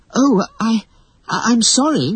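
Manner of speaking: very high, stumbling, stammering voice. Wendy apologizes to Peter Pan after he urges her to sew: stammering. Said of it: "Wendy stammered".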